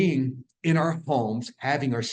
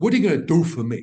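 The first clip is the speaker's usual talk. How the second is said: put-on fast, loud, rattled-off New York accent; 4 semitones higher, 6 dB louder than usual. Repeating the question asked about plants, in a New York accent. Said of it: "My New York accent".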